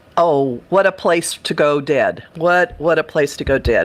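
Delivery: ordinary delivery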